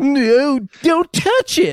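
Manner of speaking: very high-pitched, very slow voice. Retelling a bit where someone warns not to touch a button: imitating Bill Gates. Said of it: "You know how he talks".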